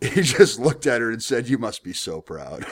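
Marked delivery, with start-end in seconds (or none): 1.5-2.6 sarcastic mock pride, quieter. Speaker quotes a man's reply after she announced her score, retelling a sarcastic remark. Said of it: "he was being sarcastic".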